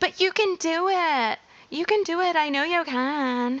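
high, cheery put-on California Valley girl voice, "can" drawn out. Coach mocking the idea that coaches are cheerleaders, California Valley girl voice. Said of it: "There's a little bit of my California Valley girl voice".

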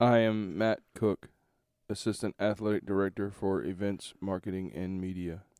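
flat, robotic, machine-like delivery. Podcast co-host introducing himself on the episode; robot voice. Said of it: "Are you going to talk like a robot".

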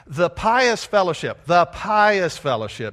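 loud, mocking, air-quoted sarcastic tone. Speaker quoting a phrase from a book with air quotes, sarcastic. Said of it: "Sarcasm here".

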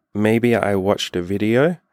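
slow, timid, very shy, acted-out bashful voice. Retelling a partner's reluctant answer after being pushed: imitating her very shy voice. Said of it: "really, really, really shyly goes".

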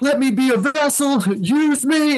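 mock very high, stretched-out, pleading scream. Recounting praying for a sister; retelling screamed prayers. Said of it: "And I'm like screaming".

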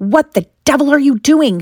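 teeth clenched, words forced out. Narrating a story, the uncle speaks to the boy through gritted teeth. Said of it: "Said Uncle Vernon through the gritted teeth".

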